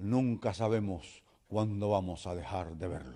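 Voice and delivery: grave, low announcer voice. Retelling a scene with an old lady in an armchair, as the announcer, deep announcer voice. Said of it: "un locutor con una voz grave decía".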